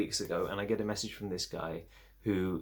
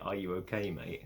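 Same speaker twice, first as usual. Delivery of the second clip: sweet teasing, quieter; 5 dB quieter than usual. Questioning the man who leads him to the bedroom: teasing in a sweet way. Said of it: "I'm teasing in a very s-, sort of sweet way".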